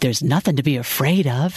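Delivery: ordinary delivery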